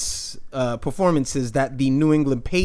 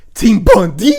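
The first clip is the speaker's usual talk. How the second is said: loud voice breaking on the words; 5 semitones higher, 8 dB louder than usual. Reading out fantasy team scores, reaching the last team: voice cracking. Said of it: "Why did my voice just crack?".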